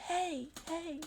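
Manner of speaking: very quiet, soft, high echo fading away. Recounting a guy's shout echoing around, imitating an echoing hey. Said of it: "his voice echoing the hey".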